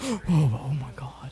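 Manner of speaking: very slow, stunned crowd murmur with gasps. Voicing a crowd that gasps and murmurs at a threat: shocked crowd murmur. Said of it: "the crowd, like, murmurs".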